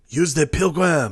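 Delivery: put-on French accent. Correcting the other speaker's movie quote, doing Lambert's French accent. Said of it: "you gotta do the right accent".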